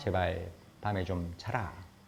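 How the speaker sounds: ordinary delivery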